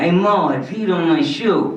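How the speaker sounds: loud, slow, stuffed-up, blocked-nose drawl. Quoting what Larry said, in Larry voice with a blocked-nose sound. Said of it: "it's like there's some blockage in there".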